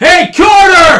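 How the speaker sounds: very loud, shrill, high-pitched yell. Voicing a character calling carter down from a window: yelling out a window. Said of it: "She yells out the window".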